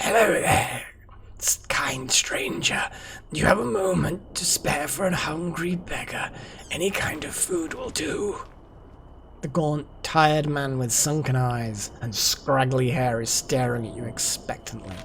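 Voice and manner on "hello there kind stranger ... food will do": hoarse, raspy, breathy, whispery beggar voice. Game narrator voices a hungry beggar greeting a stranger in a tower alcove, raspy beggar voice. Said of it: "a raspy voice makes you jump".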